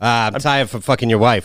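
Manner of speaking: plain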